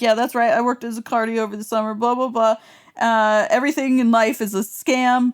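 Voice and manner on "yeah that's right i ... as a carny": plain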